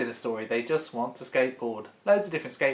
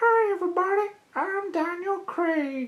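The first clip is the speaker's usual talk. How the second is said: squeaky, very high-pitched cartoon voice. Voicing a digitised game character to the viewers, Mr. Hanky voice. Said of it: "I sound like Mr. Hanky, the Christmas poo".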